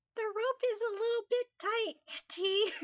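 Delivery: high voice as if after inhaling helium. Narrator reads a girl pushing her lips out to change her voice, helium voice. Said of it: "make her voice change like inhaling helium".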